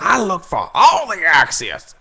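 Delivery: slow, swooping delivery like a rant. Imitating a comedian's voice screaming in the speaker's head: screaming Chris Rock voice. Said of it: "comedian Chris Rock voice in my head screaming at me like".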